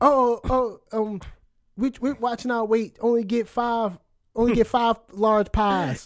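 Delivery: slow, drawling put-on Southern American accent. Imitating people ordering food on a weight-loss show: imitating a southern accent.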